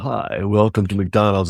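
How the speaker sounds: silky, smooth, buttery voice. Describing McDonald's drive-thru speakers, imitating the smooth, buttery greeting. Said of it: "get the smooth, buttery".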